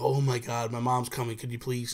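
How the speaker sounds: ordinary delivery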